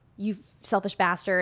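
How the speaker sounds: plain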